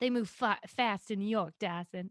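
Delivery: drawn-out Long Island accent. Doing a line to Dawson in a put-on Long Island accent. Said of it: "What accent did I just do?".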